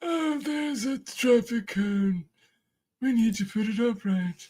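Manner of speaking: high-pitched nature documentary narration voice. Narrating what a bear does in a video: Attenborough-style narration. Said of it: "that's like Attenborough".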